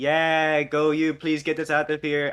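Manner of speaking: loud, high, shouted encouraging cheer. A player voices their character cheering on another character, yelling a cheer. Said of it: "I'll yell over to him and say".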